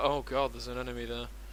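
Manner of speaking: bored, unimpressed tone.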